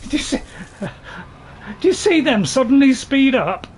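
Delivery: high, loud, indignant blurted outburst.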